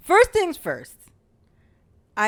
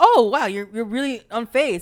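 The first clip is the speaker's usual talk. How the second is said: ordinary delivery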